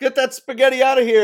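loud high yelling. Retelling a favorite movie line, mock-yelling as the character. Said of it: "when he's yelling at him about the food".

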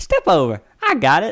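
puffed-up stadium announcer voice, loud, slow, high. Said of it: "beefs his chest out".

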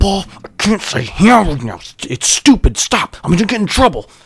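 clenched-jaw, held-in yell. Retelling telling off a classmate in class: imitating a lock-jawed quiet yell. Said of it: "lock-jawed, quiet yell".

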